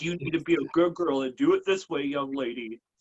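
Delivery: strict, stern fatherly lecturing tone. Imitating Amy, said to have dad energy: imitating Amy as a dad. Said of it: "I definitely get dad energy from Amy".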